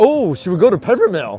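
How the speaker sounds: high, loud, eager, thrilled excitement. Speaking to the guys, suggesting where to go next, sounding excited. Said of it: "If I sound that excited".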